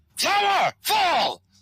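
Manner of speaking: very high, ringing calling out. Voicing a figure calling out from the flames to two players: calling out. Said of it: "you hear a voice call out to you".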